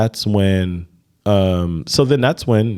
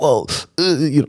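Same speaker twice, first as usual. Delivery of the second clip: acted stuttering and stammering, higher pitch; 6 semitones higher than usual. Retelling a phone call with a busy man, the speaker imitates his own stuttering.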